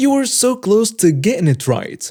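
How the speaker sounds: high, sweet, condescending sing-song voice. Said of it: "she'll condescendingly say".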